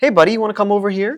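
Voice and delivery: friendly American voice. Calling a dog over in a put-on accent: regular American accent, higher pitch. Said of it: "my pitch is also higher".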